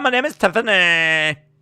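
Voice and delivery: loud, high, modern female voice, belted out. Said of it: "my pretty standard go-to modern female voice".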